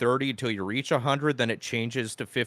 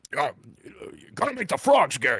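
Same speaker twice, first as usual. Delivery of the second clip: swooping, animated delivery with widely swinging pitch. Quoting what Alex Jones said about frogs, imitating Alex Jones. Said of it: "Alex Jones was like".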